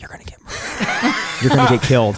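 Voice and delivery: hushed, whispered voice. Retelling a stranger asking for help, giving an Oprah whisper. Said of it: "my Oprah whisper is like".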